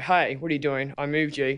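put-on harsh berating voice. Retelling how an instructor might react to a soldier: imitating an instructor berating. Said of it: "berate that soldier and go".

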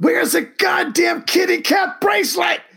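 acted, very high-pitched, half-yelled voice. Recalling his reaction the day after watching a show, retelling a yell. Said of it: "I was kind of yelling like".

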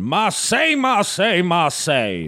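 animated rooster voice. Speaker does a French Foghorn Leghorn voice during a story reading. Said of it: "Here's French foghorn leghorn".

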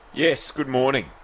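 dead-serious, very grave and sober delivery. Show guest returns the host's good morning, very serious. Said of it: "That sounded very serious".

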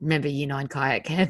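low, soft, hushed, ominous tone.

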